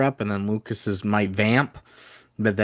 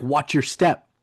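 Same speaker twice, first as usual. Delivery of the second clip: mock, aggressive soldier voice, higher pitch; 5 semitones higher than usual. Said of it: "A little aggressive".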